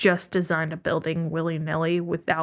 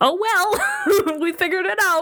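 high, laughing mock relief. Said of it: "I was like".

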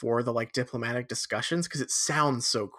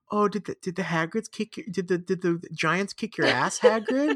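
imitated condescending cooing tone; 7 semitones higher than usual. Acting out how a character says a line, mock-condescending cooing Hermione. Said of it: "so like cooing and like bait, but like really weirdly condescending".

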